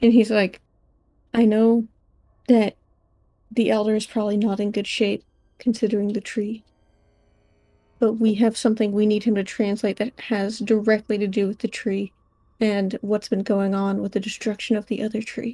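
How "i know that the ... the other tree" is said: quiet, hushed delivery. Voicing a character who leans in to make a request, talking quietly. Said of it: "like talking quietly".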